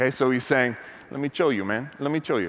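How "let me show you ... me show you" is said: thick Cuban Miami-accented English. Describing a figure, the speaker quotes him in Tony Montana's Cuban Miami accent. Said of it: "he's got that really heavy Cuban Miami accent".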